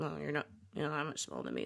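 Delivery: low, quick mutter under the breath, half to herself. Retelling a film scene on a plane, Annie answers Helen, muttered under her breath. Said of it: "like under her breath".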